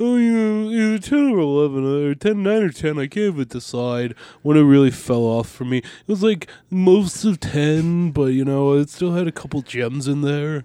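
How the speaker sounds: slow, drawling, too-cool hipster voice. Mocking a friend called a hipster, doing a J C impression. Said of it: "That was such a good J C impression".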